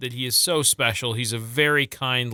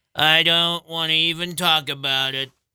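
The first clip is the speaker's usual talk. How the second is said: mocking put-on voice, higher pitch; 5 semitones higher than usual. Teasing the other speaker by doing an impression of him. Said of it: "my impression of you".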